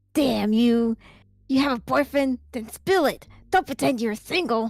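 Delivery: acted, put-on angry man voice. Voicing the man in a story read aloud: acted angry man. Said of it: "You want me to do this person?".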